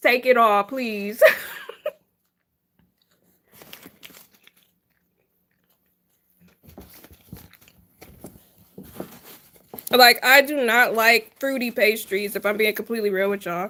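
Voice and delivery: chewing while talking, mouth full. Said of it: "I'm sorry if I sound like I'm chewing really loud".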